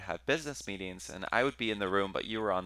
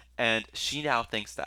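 ordinary delivery

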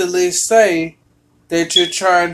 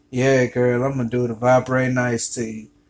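low, seductive, sexy put-on voice; 6 semitones lower, 5 dB quieter than usual. Retelling a late-night talk with a new friend: retelling own sexy voice. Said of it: "I got my sexy voice on".

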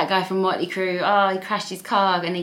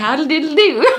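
put-on proper gentleman voice, higher pitched; 8 semitones higher, 6 dB louder than usual. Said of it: "A proper gentleman".

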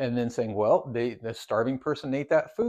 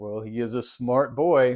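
put-on smugly pleased, self-satisfied delivery; 4 dB louder than usual. Retelling a comic scene where a character sounds smug: imitating a smug tone. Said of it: "Jor-El is very smug about it. He's like".

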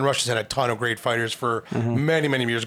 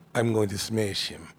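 put-on cold fighter voice, lower and quieter; 2 semitones lower, 4 dB quieter than usual. Describing fighters who barely talk, imitating Khabib's cold and calculated threat. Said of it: "it's like real cold and calculated".

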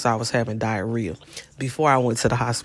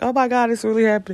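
mock sobbing in a very high-pitched, tearful crying voice; 10 semitones higher than usual. New mother retelling a friend's call before the birth, imitating Erica crying. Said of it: "she was like crying like".

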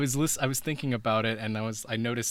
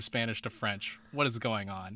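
ordinary talk, nothing marked

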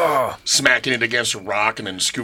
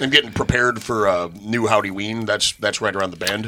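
plain

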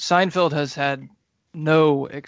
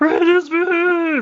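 very high, loud, squeezed voice, "beef" stretched out; 5 dB louder than usual. Trying a requested mashup voice, Kermit and Jerry Seinfeld mashup voice. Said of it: "It was pretty good".

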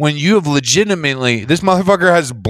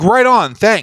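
sarcastic, falsely polite, pitched-up, passive-aggressive; 6 semitones higher than usual. Retelling thanking the person who banned them: imitating own passive-aggressive thanks. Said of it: "Passive aggressive".

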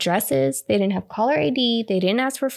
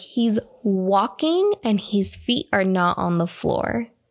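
ordinary talk, nothing marked

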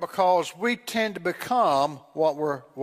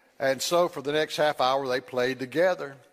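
ordinary delivery

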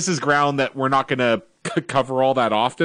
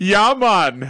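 easy put-on Jamaican accent, pitched up; 6 semitones higher, 3 dB louder than usual. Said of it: "all just takes his accent".

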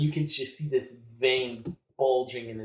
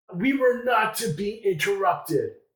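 high-pitched, roaring, commanding bellow; 8 semitones higher, 5 dB louder than usual. In a role-play scene, Liverich shouts when interrupted; Liverich bellowing. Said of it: "Liverich just bellows".

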